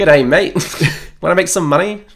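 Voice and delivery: mock Australian accent. Repeating the other's Dodger line back: mock Australian accent. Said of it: "He's suddenly gone Australian".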